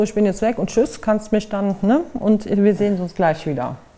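ordinary delivery

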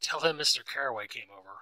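plain reading voice

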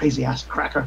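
hushed under-breath whisper. In a role-play scene, the narrator voices a man walking away, retold whisper under breath. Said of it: "he's like whispers under his breath".

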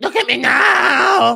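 very high, slow, drawn-out, raspy, creaky crowing. Ranting about the UFC, the speaker does an impression of Leon Edwards' dad. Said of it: "Impression of Leon Edwards' dad".

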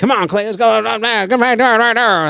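insistent, encouraging urging. Retelling a friend's texts urging a comeback: imitating John King. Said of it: "that's my impression of John King".

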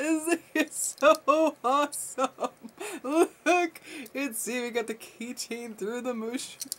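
high voice, laughing through the words.

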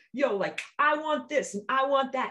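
sassy, silly attitude voice, high and loud. Describing wanting things, the speaker slips into a funny attitude voice. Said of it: "sometimes I make a funny voice like".

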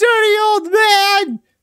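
very high, pitched-way-up woman's voice. Reading game dialogue aloud, doing Laura's voice. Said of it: "what was her voice?".

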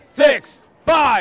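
loud, high-pitched shouting.

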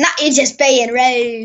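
poor put-on British accent. Repeating the other speaker's remark back, bad British accent. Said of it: "if you were trying to go for a British accent".

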